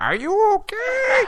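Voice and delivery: very high, loud storybook witch voice. Retelling being freaked out, quoting the woman asking after you, witch voice. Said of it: "like a witch voice".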